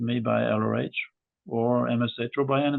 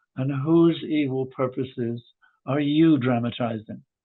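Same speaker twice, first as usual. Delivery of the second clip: acted out, furious and accusing, very loud angry shouting; 3 dB louder than usual. Retelling what a furious visitor at the office door said: imitating a loud angry voice. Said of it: "she said in a very loud voice, a very angry voice".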